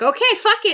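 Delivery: defeated yelp.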